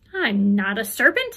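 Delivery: slow, offended, affronted and indignant. Answering a pigeon that is beating her with its wings, indignantly. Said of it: "said Alice indignantly".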